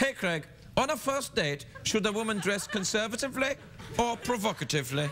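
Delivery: put-on German accent. Reading out a question sent from Germany, in a German accent. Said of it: "I have to say this in a German accent".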